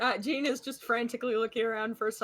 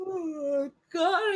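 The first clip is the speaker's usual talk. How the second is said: pitched-up words spoken through a yawn; 8 semitones higher, 3 dB louder than usual. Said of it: "I can't stop yawning".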